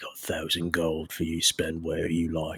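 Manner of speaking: soft, confiding half-whisper. A game master voices a character speaking to the player, half-whispering. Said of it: "And he just whispers".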